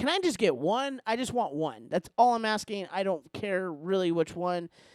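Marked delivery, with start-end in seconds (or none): 0.0-2.9 high, lifted, raised voice. Retelling waiting while people cut in front, retelling a raised voice. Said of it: "but I raised my voice".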